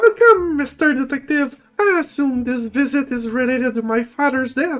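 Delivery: high feminine voice. After coughing a few times, he greets the detective in a higher feminine voice. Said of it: "in a higher, higher feminine voice".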